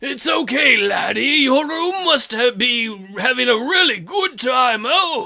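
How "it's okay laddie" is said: put-on creepy old man voice. Recalling a voice used before, creepy old man voice. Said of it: "It was creepy old man voice".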